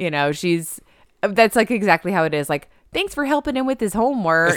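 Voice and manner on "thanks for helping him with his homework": strong put-on Midwestern accent, pitched up. Quoting the mom from a movie scene: imitating Mom with Midwestern accent. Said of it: "I just made her real Midwestern".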